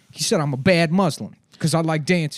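put-on very loud, high, upset, sulky pouting. Retelling what a kiosk worker said after being scolded for dancing: imitating a pouting, upset man. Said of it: "pouting. He's all upset".

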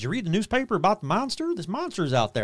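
fake small-town accent. Retelling what townspeople were saying around town, in a put-on accent. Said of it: "I don't know why I'm doing that, that accent".

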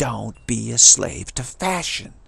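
put-on elderly woman's voice with Brooklyn accent. Repeating what an elderly lady once said, in her Brooklyn accent. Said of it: "in her wonderful East Coast Brooklyn accent".

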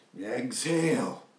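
exhale heavily stressed. Imitating Pattabhi Jois leading a class, stress on EXHALE. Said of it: "he would emphasize that exhale".

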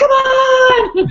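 excited, high, loud cheer, stretched on. Describing watching competitive eating, the speaker retells yelling at the TV. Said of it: "I'm like".

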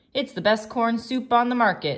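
said with real pride. Steve replies to Jaden, who has just named his favourite soups, proudly. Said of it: "Steve said proudly".

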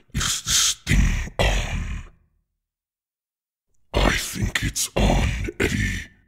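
put-on voice dropped right down deep. Venom speaking to Eddie, Venom voice. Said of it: "We are Venom. ... Deep Voice".

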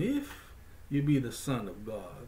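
acted, coaxing seductive voice with swooping pitch. Retelling the tempter's words to Jesus, in a put-on seductive voice. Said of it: "some voice of seduction".

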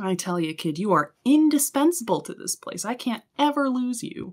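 enthusiastic, jazzed tone. Game master voicing the captain, praising the vice captain; enthusiastic captain voice. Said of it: "and [name] is maybe, you know, a pretty fit, beefy woman in her mid to late 20s. Just so enthusiastic. She is just so jazzed to have you here with her".

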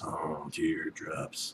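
sinister, creepy put-on creeper voice. A gamer introducing a video says the secret level's name in a creeper voice. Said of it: "Don't know why I did the creeper voice for that".

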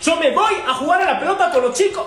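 firm, assertive, forceful delivery. Rehearsing a line to 'mi amor' after sounding too weak, forceful, firm delivery. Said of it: "¡Más, más fuerte!".

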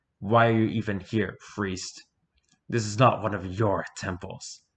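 beastly, growled words in monster voice. Reading the story, the Oni speaks to the priest, growling. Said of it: "The Oni growled these last words".

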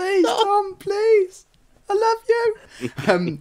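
shy, very high, squeaky fanboy voice. Speakers joke about a fan begging Tom for his shirt; mock shy squeaky fanboy. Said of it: "squeaky voice".

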